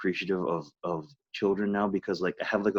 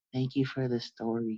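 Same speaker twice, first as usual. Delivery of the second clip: put-on gentle, soft, sweet, tiny little-girl voice; 3 semitones higher, 6 dB quieter than usual. Retelling what a little girl said when her mom brought her over: soft, sweet little-girl voice. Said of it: "the softest, sweetest little voice".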